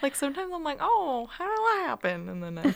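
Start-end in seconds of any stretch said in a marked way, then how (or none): 0.8-2.3 put-on Southern accent, pitched up. Speaker shows how a thought sounds inside their head: Southern accent. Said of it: "That's my Southern accent voice coming into your head".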